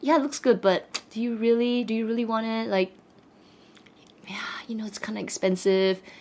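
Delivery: hushed, gentle, very soft voice. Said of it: "that voice in my head was saying".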